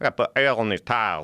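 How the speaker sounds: put-on Virginia accent. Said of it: "what is a Virginia accent".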